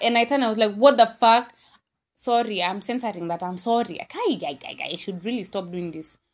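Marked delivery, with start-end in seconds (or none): 0.8-1.5 play-acted, loud, angry, blurted exclamation. Retelling turning to a guy who passed by: retelling own angry outburst. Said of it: "And I was so mad".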